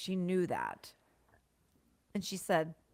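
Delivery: words pushed out through a burp. Telling a story on a podcast, the speaker keeps burping mid-sentence. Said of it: "I'm totally burping right now".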